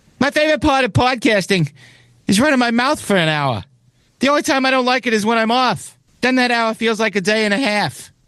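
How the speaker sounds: very high-pitched comedian voice. Reading a second joke aloud in a Bill Burr impression. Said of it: "That was a decent Bill Burr".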